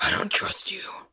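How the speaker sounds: rasping, breathy whisper. Playing Batman opposite another character, Batman voice. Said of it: "I couldn't even do a good Batman voice. I'm like just that rasping".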